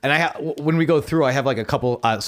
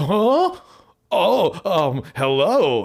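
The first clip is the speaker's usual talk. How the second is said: high, very slow, startled, just-woken voice; 5 semitones higher than usual. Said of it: "sounds so surprised to be there, slash he just woke up".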